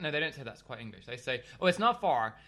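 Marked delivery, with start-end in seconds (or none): 1.6-2.3 put-on loud, higher voice with American accent. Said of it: "do the accent".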